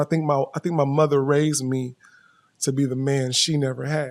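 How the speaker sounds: plain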